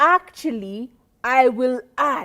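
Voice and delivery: confident, firm delivery. Explaining tone, the speaker demonstrates the firmer way to add a point: assertive, with presence. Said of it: "the presence of my voice as I say".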